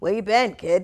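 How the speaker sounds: put-on very loud New York accent. Retelling his first show, quoting Nancy's question in her deep New York accent. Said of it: "in her beautiful, like deep, like New York accent".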